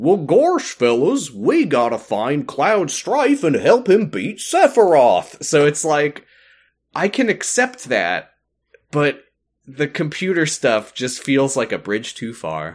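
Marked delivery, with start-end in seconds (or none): 0.0-5.4 high cartoon voice swooping upward. Joking about the Kingdom Hearts characters, in a Goofy voice. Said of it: "I don't want to do his voice right now. You just got Goofy being like".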